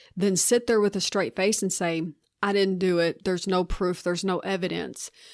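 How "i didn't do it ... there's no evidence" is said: ordinary talk, nothing marked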